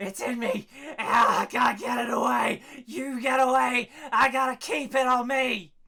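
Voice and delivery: wild raving yelling. Voicing a frenzied man screaming wild at the players: yelling madman. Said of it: "he's just yelling".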